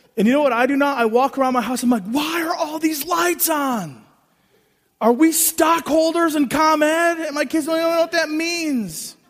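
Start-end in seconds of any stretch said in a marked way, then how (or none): 0.2-7.2 acted-out, slow, fed-up, exasperated sarcasm. A father describes walking around his house finding lights on, mock-exasperated dad. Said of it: "exasperated dad mocking wasted electricity".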